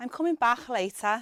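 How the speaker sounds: Liverpool accent, constricted k in "back". Demonstrating how a Scouser would say it, Scouse accent. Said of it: "a Scouser would say".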